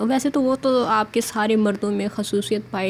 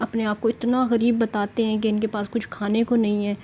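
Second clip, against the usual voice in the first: usual speaking voice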